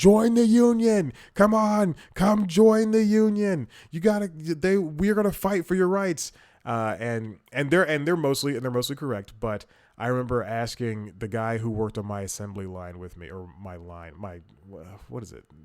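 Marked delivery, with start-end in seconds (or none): 0.0-6.3 very loud, shrill, high-pitched holler. Retelling how union members outside the shift exit called out: imitating union members yelling. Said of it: "yelling at you, like".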